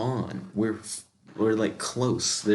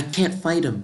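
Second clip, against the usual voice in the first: put-on girl voice, pitched up; 5 semitones higher, 4 dB louder than usual. Narrating a story and voicing a girl character's lines: Ofta voice. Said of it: "Since Ofta's a girl, I'll do a voice like this".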